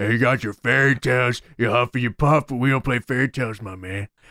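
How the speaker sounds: taunting wrestler's mic promo delivery. Retelling a wrestler's promo on the mic: Jake Roberts impression. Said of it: "Jake Roberts then gets the mic, comes out and says".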